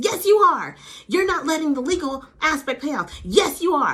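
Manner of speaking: put-on, very high, shrill, aggressive, combative tone. Retelling an argument between two women: imitating an aggressive retort. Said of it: "And she was so aggressive".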